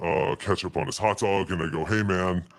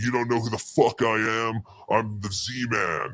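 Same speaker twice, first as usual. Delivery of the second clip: put-on, self-important, indignant ranting boast; 4 semitones higher than usual. Retelling an argument at a food truck: imitating Chad yelling. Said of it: "Chad is yelling at him".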